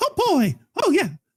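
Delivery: very high, mouse-like cartoon voice. Speaker does a voice while doing a technical task, Mickey Mouse voice. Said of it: "I'll do the Mickey Mouse voice".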